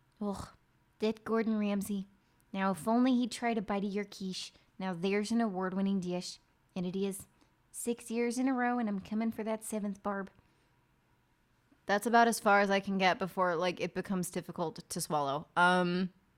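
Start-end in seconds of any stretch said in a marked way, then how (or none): 0.2-10.3 small-mouthed put-on voice, higher. Showing the voice done for a role, speaking with a tiny mouth. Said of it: "I just made my mouth as small as possible".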